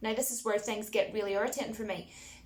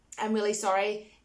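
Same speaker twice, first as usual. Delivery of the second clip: ordinary delivery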